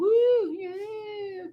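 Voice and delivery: very high, weak cheering woo. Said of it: "you know".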